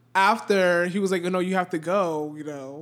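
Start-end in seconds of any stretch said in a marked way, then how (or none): none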